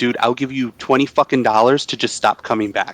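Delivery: mock full-volume speech, not whispering. Retelling telling a waiter to stop coming back: out loud, not whispering. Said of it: "I didn't even whisper".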